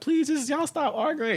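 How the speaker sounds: put-on crying. Retelling his mom begging during a family argument, imitating mom crying. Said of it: "My mom was crying".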